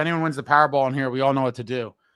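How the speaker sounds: normal talking voice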